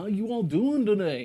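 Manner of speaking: loud, called-out voice projected to a room. Greeting viewers at the start of the stream: Jerry Seinfeld impression. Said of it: "That's my Jerry Seinfeld impersonation".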